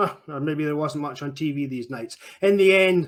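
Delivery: ordinary delivery, nothing marked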